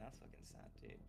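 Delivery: very quiet muttering under the breath, aside. Retelling what a guy said under his breath after hearing 'my only friend', muttering. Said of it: "Under his breath".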